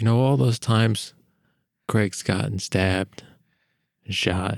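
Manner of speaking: loud, poorly hidden whisper. Playing a character whispering badly to another character: bad loud whisper. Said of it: "[name]'s gonna try and whisper to Ollie".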